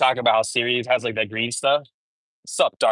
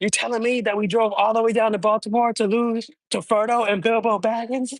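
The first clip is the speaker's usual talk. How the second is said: high, furious, cursing rant; 10 semitones higher than usual. Recounting a cousin's fury after losing a game, imitating an angry rant. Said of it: "he was so mad, bro".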